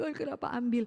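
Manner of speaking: mock crying, tearful lamenting voice. Recounting a grieving person's prayer to god, imitating someone crying. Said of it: "masih nangis-nangis".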